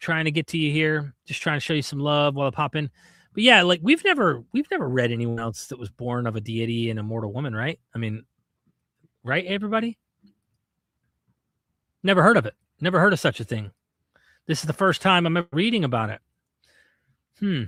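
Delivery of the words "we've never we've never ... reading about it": heavy, laid-on sarcasm with swooping sing-song. Reading a text aloud with chat and reacting to it: sarcastic. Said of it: "being sarcastic here".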